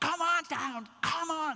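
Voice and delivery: very high, loud, angry, furious screaming. Telling a story, the speaker acts out screaming at others: retelling own screaming. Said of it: "I'm screaming at them".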